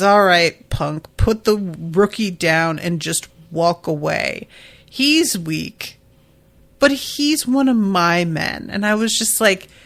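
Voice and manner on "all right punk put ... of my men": ordinary talk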